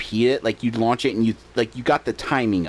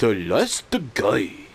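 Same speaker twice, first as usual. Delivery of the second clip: English words in a put-on Japanese accent. Speaker imitates the guy heard when launching a zombie game, in a Japanese accent. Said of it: "this guy in like a Japanese accent goes".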